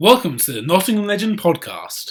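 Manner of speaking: put-on radio DJ announcing voice. Co-host tries out a podcast intro for the other to judge; put-on dj intro voice. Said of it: "You changed your voice as well".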